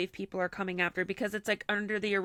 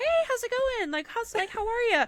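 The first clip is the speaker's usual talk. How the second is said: very high-pitched customer-service voice; 4 dB louder than usual. Speaker retells greeting someone who walks in mid-story, customer service voice. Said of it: "Turning on the customer service voice".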